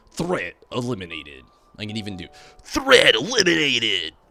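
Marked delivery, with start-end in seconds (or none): 0.1-1.4 90s game voiceover voice, louder. Offering their voice to a game studio, in a nineties game voiceover voice. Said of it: "I sound like a classic nineties game voiceover character".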